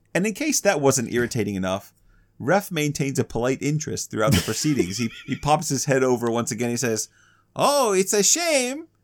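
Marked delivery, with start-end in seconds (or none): 7.5-8.7 put-on very high, taunting, drawn-out French accent. Describing a character who pops his head over again, in a French knight voice. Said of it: "you're doing the French knight?".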